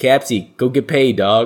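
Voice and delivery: put-on Boston accent. Quoting the man who handed him the ball mid-inning, thick Boston accent. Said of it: "he had this really thick Boston accent".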